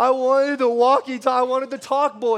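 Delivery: put-on crying child voice, bawling, sobbing, yelling. Like a small child in the middle of a meltdown, sobbing and shouting at their parents about the one thing they wanted. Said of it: "I'm yelling this thing out loud".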